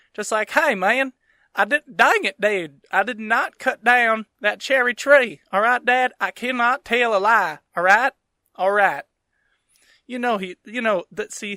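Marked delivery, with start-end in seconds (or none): 0.5-9.1 loud, over-the-top rural Southern US accent. Joking how it would be funnier: George Washington as full-blown redneck. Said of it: "like full blown redneck".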